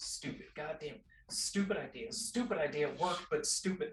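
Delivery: whispering and muttering under the breath. Voicing a character hobbling away: in-character whispering to herself. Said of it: "She's whispering to herself".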